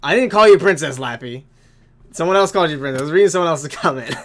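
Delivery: loud, high, indignant protest.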